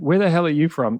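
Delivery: plain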